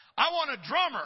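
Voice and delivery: very high hollering voice. Retelling how a brother called back through a door: imitating someone hollering back. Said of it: "he just hollered something back like".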